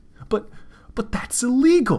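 sudden, high, loud blurted outburst. The cashier answering another character's demands, blurted out. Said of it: "blurted the cashier".

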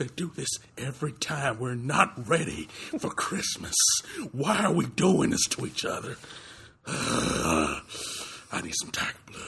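put-on Hollywood actor voice, ranting and complaining. Ranting about early Christmas decorations as Gary Busey: Gary Busey impression. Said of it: "the right mind frame for Gary Busey".

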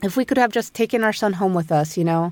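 ordinary talk, nothing marked

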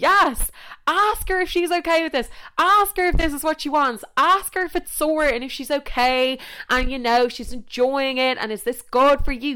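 high-pitched, loud, excited cheering.

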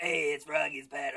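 loud, throat-straining TV host voice. Recalling the voice of a morning TV show's host: Froggy's Pad host voice. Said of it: "I just did that for 3 seconds and I'm in pain".

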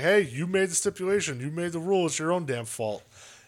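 play-acted, mocking, needling taunt. Retelling a wrestler taunting another backstage: imitating someone mocking. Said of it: "Priest was just mocking him".

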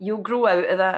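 ordinary delivery

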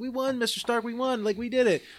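mock elated, excited cheer, very high-pitched. Retelling a movie scene where Peter comes over to a dying Mr. Stark: imitating Peter, mock-excited. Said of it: "he's like excited".

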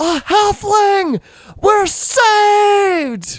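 very high, slow cry with the last word stretched. Voicing a Dragonborn who spots a halfling in the street: yelling out. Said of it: "she yells out in Draconic".

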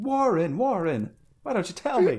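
slow, high, swooping, drawn-out scream. Describing a movie scene where a man screams into a soup-can phone: Randolph Carter screaming. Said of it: "he's like screaming into it".

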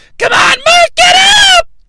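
very high, shrill, nagging, rising yell. Imitating a wrestling manager yelling at her wrestler: imitating a shrill yell. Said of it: "it's annoying and shrill".

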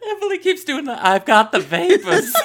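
very high, loud speech through laughter. Unable to stop laughing because of someone else's laughing, laughing while talking. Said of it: "I can't quit laughing".

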